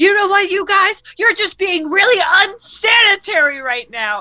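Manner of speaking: acted, very high, shrill angry screaming outburst. Retelling a brother getting upset at his parents: imitating someone screaming. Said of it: "screaming at them".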